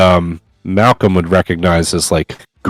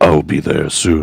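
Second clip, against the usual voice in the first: put-on dark, foreboding, eerie, ominous voice; 3 semitones lower than usual. Describing what a barely alive enemy just said: ominous voice. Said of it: "some voice, you know, ominously came out".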